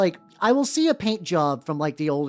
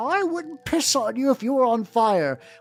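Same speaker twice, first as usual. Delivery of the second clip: higher, slow, upset preacher voice. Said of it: "preacher mode and he gets upset".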